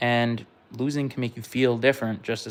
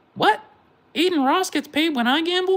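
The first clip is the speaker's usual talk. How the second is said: put-on very high childlike voice; 5 dB louder than usual. Speaker acts out an imagined conversation, voicing the kid; put-on kid voice. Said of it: "that was my kid voice".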